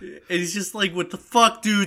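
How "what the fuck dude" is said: put-on panicked yell, higher and louder. Retelling the passenger shouting at Pesci: imitating someone freaking out. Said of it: "He's freaking out".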